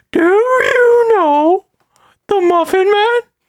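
very high, loud, squeaky voice. Answering the other speaker with a question, doing the Gingerbread Man voice. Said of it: "The fucking gingerbread man voice so well".

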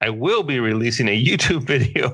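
words fighting back a giggle, barely holding it. Reading out someone's resignation tweet, trying not to laugh. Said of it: "can't even say it without laughing".

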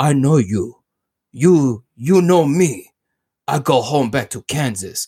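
slightly broken, halting caveman speech. Retelling a scene where he speaks to Lois, like a caveman. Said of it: "he speaks like a caveman a little bit".

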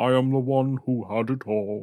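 acted monster voice. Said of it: "a little bit of Sean Connery in there".

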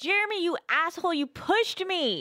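mock, high, drawn-out cursing scream. In a role-play scene, a character shouts at jeremy, screaming and swearing. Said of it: "like just screaming and swearing".

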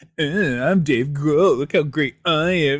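slow, sneering, sarcastic mocking drawl. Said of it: "he being all sarcastic and mocking him".

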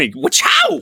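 cartoon sound-effect exclamation.

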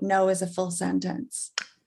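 ordinary delivery

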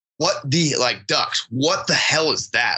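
ordinary delivery

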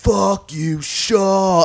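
rowdy, high-pitched heckling yell. Retelling drunk college fans in the bleachers: imitating drunk fans yelling. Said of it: "they're yelling at Miles Straw, but what they're saying is".

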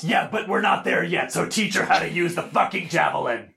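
furious, angry, loud yelling. Playing a character in a tabletop game with family, angry yelling. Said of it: "Sorry, I got angry".

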